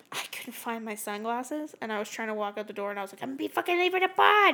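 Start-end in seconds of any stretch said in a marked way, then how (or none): 3.2-4.5 mock temper tantrum, raised, pitched-up voice. Retelling a temper tantrum over lost sunglasses: retelling own temper tantrum. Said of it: "I had a temper tantrum today".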